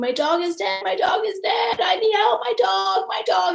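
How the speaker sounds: frantic, panicked, very high-pitched scream. Recalling running around the truck for help, the speaker retells a panicked scream. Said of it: "I was screaming".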